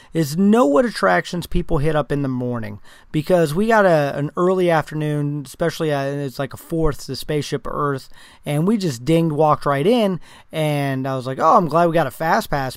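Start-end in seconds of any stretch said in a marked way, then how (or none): 11.4-12.8 sarcastic, saying the opposite. Retelling own remark about a short wait: retelling own sarcastic remark. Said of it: "being sarcastic".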